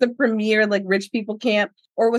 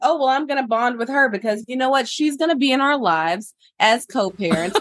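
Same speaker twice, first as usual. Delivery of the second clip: ordinary delivery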